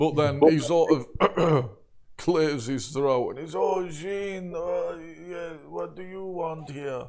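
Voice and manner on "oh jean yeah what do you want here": put-on slow elderly priest voice, "yeah" drawn out. A storyteller voices a priest greeting Jean: old priest voice. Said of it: "an old priest sort of rounds a bookshelf".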